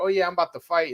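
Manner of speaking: puffed-up, cocky, tough-guy swagger. Retelling how a fighter acted before his other fights, mock-tough bravado. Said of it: "looking all tough and celebrating".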